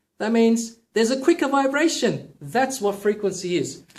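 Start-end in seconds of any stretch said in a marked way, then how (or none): 0.2-2.3 high-pitched, raised voice. Explaining vocal frequency by demonstrating, in a higher voice. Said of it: "if I'm speaking to you with a higher voice".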